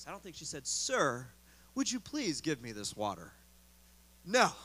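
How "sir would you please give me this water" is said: unhurried, relaxed, very low, polite tone. Showing how the woman did not ask for the water, in a relaxed voice. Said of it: "in just a relaxed voice".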